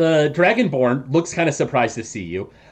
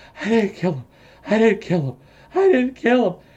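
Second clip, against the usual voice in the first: quick, breathless gasping delivery; 6 semitones higher than usual. Game master voicing a frail woman just out of the liquid, muttering between breaths. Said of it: "mutters in between breaths".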